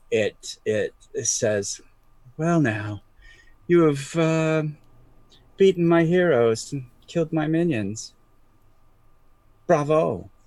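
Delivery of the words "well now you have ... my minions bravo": clear, crisp, lilting, musical, polished villain's voice. Voicing a creature that golf claps at the heroes: crisp musical voice. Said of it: "a crisp musical voice".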